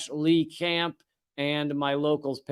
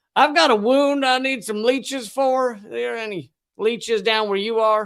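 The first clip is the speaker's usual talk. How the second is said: put-on Southern accent, raised in pitch; 7 semitones higher, 5 dB louder than usual. Voicing how a grandmother from Richmond, Virginia would say it, Southern accent. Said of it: "I'm putting it in Southern because this is how my grandmother would have been".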